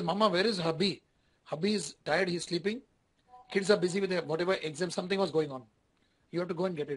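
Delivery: plain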